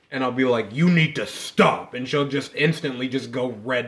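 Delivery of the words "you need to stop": slow, mock, piercing voice that cuts through. Retelling what was said to provoke her, imitating own attention-snapping voice. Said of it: "when I do that voice".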